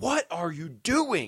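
play-acted, drawn-out, swooping, high scream, very slow. Retelling the principal running at students playing drums: imitating someone screaming. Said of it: "he's screaming at us".

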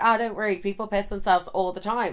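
ordinary delivery

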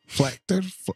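put-on high, botched Scottish accent that sounds Russian. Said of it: "You're sounding like a defector from Russia".

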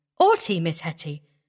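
plain

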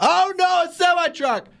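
shouting pitched very high. On a calming podcast, talking to Mom about driving alert, yelling. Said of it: "You're yelling again".

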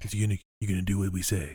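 mafia tough-guy, mob heavy voice. Quoting a mafia character from a film scene, imitating the mafia guy. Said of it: "That's that guy".

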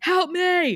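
mock shout, pitched very high. Recapping an episode, acting out a character's line, retelling a shout. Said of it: "He shouts".

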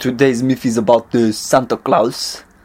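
mock French accent. Telling the Santa Claus myth after being asked for a French accent. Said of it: "in a French accent?".

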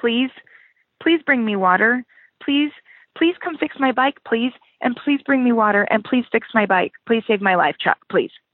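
put-on pleading tone. Retelling a friend's text asking for help: imitating a pleading text. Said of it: "a pleading text from you that went something like".

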